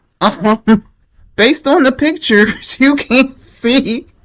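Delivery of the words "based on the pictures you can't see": high, nonstop giggling ramble. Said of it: "Let me get it together".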